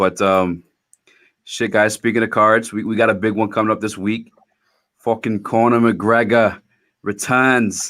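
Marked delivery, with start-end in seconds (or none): 5.0-7.9 bad, slow, put-on Irish accent. Announcing a big fight coming up this week: bad Irish accent. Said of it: "How how was that accent".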